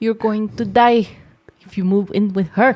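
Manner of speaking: put-on Filipino accent. Voicing disapproving parents after being asked to: filipino accent. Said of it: "Say it in a Filipino accent".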